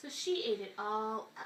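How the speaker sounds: plain reading voice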